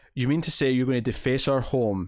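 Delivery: ordinary talk, nothing marked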